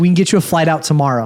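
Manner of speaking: ordinary talk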